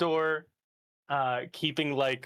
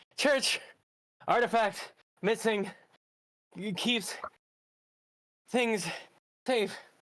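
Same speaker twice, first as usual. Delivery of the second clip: put-on wheezy panting, high, halting broken phrases; 9 semitones higher than usual. Retelling what he said on catching up after running, retelling panting, wheezing. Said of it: "panting, wheezing".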